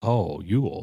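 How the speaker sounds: put-on Southern accent, man's voice. Speaker retelling what Hughes said in reply, Hughes's Southern man's voice. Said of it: "He had that Southern man's voice".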